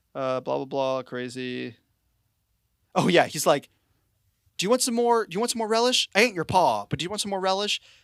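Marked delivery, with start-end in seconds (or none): 4.5-7.7 mock rattled-off exclaiming, high and rapid. Retelling a movie character offering relish in a cafeteria, imitating someone exclaiming. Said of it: "Just like exclaiming in this cafeteria".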